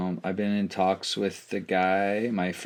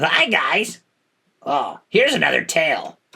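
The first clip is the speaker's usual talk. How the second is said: deliberately irritating put-on voice, high and loud; 7 semitones higher, 7 dB louder than usual. Trying out a pitch-shifted voice with another speaker; annoying character voice. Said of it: "make the voice like less annoying".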